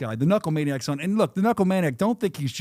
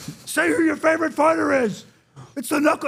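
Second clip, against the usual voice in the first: put-on screaming, higher; 11 semitones higher, 3 dB louder than usual. Retelling a fighter screaming at a little girl: imitating Knuckle Maniac screaming. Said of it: "He's screaming at her".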